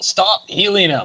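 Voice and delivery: very high, shrill put-on battle shout. Voicing a character who turns to an enemy and yells: character yelling. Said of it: "Tom's gonna just turn around and yell".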